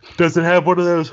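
talking through a yawn. Asking another speaker about a machine's tag, yawning while talking. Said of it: "I'm yawning here".

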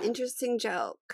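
dry, soft, unimpressed delivery.

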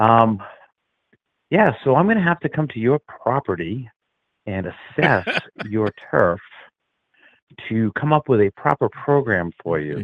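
effortfully dropping a Boston accent, strained. Asked by the hosts to talk without a Bostonian accent, suppressing his Boston accent. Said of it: "talk to us without a Bostonian accent".

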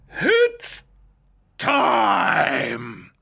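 very high, swooping, stretched-out main-event announcer call. Trying the Bruce Buffer impression again after being asked: Bruce Buffer impression. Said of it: "more of a Vince McMahon".

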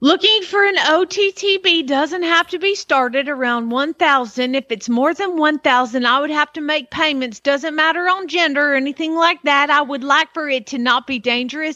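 put-on American Southern accent in a run-on read. Reading a post from ottb market aloud, in a southern accent. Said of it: "but let's go with it".

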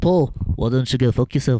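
put-on Liverpool accent. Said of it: "Was that your impression of [name]?".

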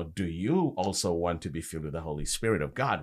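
ordinary talk, nothing marked

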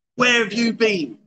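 cross, demanding, mild angry yell. Asked to practise yelling at someone who came home late, loud shout. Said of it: "Can we practice that?".

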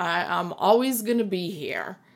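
ordinary talk, nothing marked

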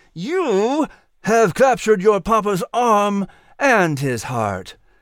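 teasing through gritted teeth. A father scoops his giggling little daughter into his arms, teasing through gritted teeth. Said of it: "Patrick teased through gritted teeth".

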